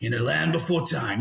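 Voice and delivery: dramatic, epic movie-trailer narrator voice. Acting out a reference giving their story as a movie trailer, blockbuster trailer voice. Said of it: "I want that blockbuster voice going".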